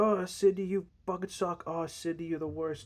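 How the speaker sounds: high, hollering voice. Retelling a scene where somebody outside is yelling: imitating someone yelling. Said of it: "somebody is, like, yelling".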